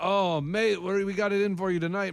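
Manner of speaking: slow, put-on Australian accent. Retelling what the performers said before the show: imitating an Australian accent. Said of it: "Were they really Australian, or were they faking the accent?".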